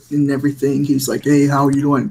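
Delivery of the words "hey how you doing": put-on talking with full mouth. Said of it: "they all talk with their mouth full".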